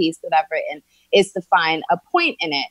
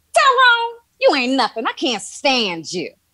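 pitched up, with swinging, swooping intonation; 7 semitones higher than usual.

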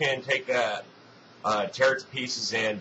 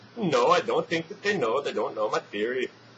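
put-on steady Belgian accent throughout; 3 semitones higher than usual. Retelling how a man answered an interviewer's question, in a Belgian accent. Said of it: "says in his Belgian accent".

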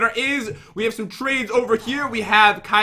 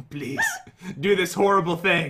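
coaxing, tempting, swooping little devil voice; 3 semitones lower, 4 dB quieter than usual. Acting out a devil on the shoulder urging something: imitating a shoulder devil. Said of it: "sit on your shoulder and they're like".

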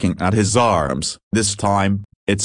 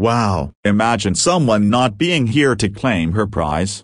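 ordinary delivery

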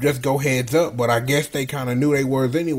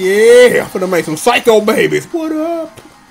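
loud little shout in a raised voice; 8 semitones higher, 9 dB louder than usual. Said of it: "Ed got him a little shouting".

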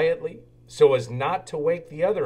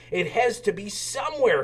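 firm, insistent, pitched-up delivery; 6 semitones higher than usual. A little engine hunting for a shooting star chugs on alone, insistent. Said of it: "Thomas insisted".

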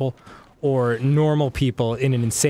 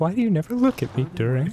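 slight, high, wavering lilt, on the verge of tears; 6 semitones higher than usual. Showing how to deliver a line, voice wavering, about to cry. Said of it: "with a slight lilt of like about to cry in your voice".

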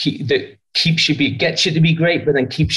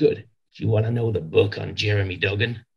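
put-on low, soft voice with American accent; 5 semitones lower, 6 dB quieter than usual. Retelling a phone call from John McMahon, in a John McMahon American accent. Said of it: "when I do an American accent".

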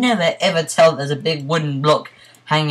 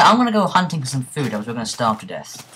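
normal talking voice

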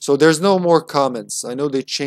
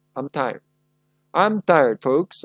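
put-on old-time 1950s tv commentator voice. Reading out their own writing, the speaker tries a 1950s TV personality voice. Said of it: "It sounds like a commentator, but that's what I'm going for".

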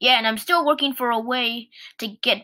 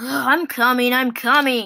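groaned, groaning voice; 3 dB louder than usual. A small engine answers a big engine calling for its coaches, groaning. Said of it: "groaned Percy".

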